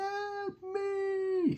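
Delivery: very high wailing cry in agony, me drawn out. Explaining the word wailing, the speaker imitates a woman wailing. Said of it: "she's wailing".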